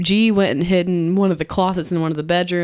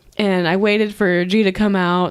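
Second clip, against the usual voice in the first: usual speaking voice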